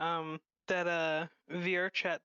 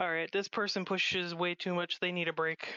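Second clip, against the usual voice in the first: usual speaking voice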